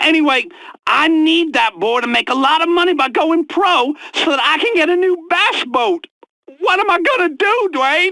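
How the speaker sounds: high, sobbing, crying through the words. A man asks someone what to do about a boy's problems, crying. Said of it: "I I can't stop crying".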